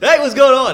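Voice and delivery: super amped, very high, loud, high energy voice. Retelling a voicemail greeting that fooled the caller: imitating Cole's high-energy greeting. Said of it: "Cole's super high energy, so he goes".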